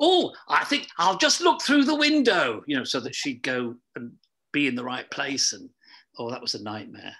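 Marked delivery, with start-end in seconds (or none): 0.0-2.6 very high, loud voice with swooping pitch. Retelling voicing Bungle from the wings with a microphone: Bungle voice. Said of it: "So I was having to sort of say".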